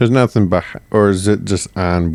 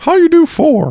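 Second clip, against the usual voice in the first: very high-pitched, squeaky cartoon voice; 4 dB louder than usual. Retelling a story, asking how someone did it in four, in a Mickey Mouse voice. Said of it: "That's a really good H R E accent".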